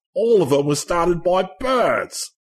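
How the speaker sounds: clumsy put-on Australian accent. Quoting someone, in a terrible Australian accent. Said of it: "forgive me for the terrible Australian accent".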